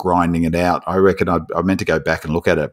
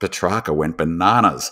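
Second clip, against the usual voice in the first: usual speaking voice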